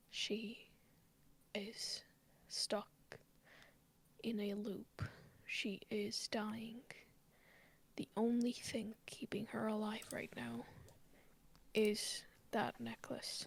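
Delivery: whispering. A character leans down to speak into a companion's ear, whispering. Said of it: "And I whisper in your ear".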